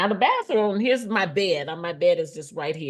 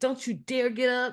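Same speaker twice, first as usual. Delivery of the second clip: high, loud screaming; 6 semitones higher, 3 dB quieter than usual. Retelling how the nurse ordered her to stay in bed: imitating someone screaming. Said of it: "so she's actually screaming".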